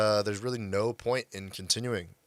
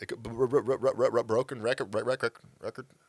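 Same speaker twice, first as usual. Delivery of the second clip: stuttering, stammering, repeating words; 2 semitones higher than usual. Speaker acting like a broken record mid-sentence; stuttering, repeating words. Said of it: "I'm stuttering".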